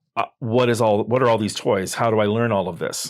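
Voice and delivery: ordinary talk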